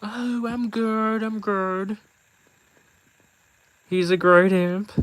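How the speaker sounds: very high, slow, drawn-out cartoon character voice. Imagining how Charlie Morningstar would answer a question, in a Charlie Morningstar impression. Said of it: "My best Charlie impression".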